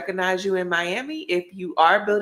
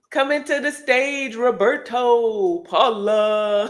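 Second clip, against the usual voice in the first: club emcee announcer voice, higher; 4 semitones higher, 3 dB louder than usual. Bringing the next guest to the stage: strip club announcer style. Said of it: "Why'd you make it sound like".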